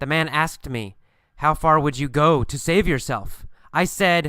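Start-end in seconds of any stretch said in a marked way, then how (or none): none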